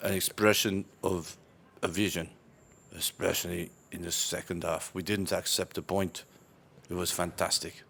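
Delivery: deadpan, really bored, flat monotone delivery. Asked to do a Jose Mourinho interview, give a really bored Jose Mourinho impression. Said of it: "You have to sound really bored to do Jose Mourinho".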